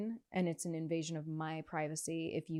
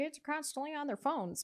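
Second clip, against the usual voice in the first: put-on very high elderly woman's voice; 10 semitones higher than usual. Complaining about kids on phones, imitating an eighty-year-old woman. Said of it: "eighty-year-old woman being like".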